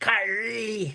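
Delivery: high, stern Japanese anime-style voice.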